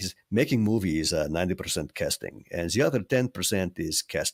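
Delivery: bad, clumsy put-on Czech accent. Quote your late teacher's answer about making a good movie, in a bad Czech accent as Milos Forman. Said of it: "here I'll do my bad Czech accent".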